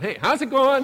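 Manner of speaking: high, nice, cheery voice. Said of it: "You know, nice, cheery voice".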